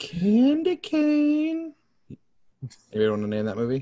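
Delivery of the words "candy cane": put-on very high-pitched creepy old man voice. Asking the others to name a movie from its poster, in a Family Guy creepy old man voice. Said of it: "you just sounded like the old creepy man".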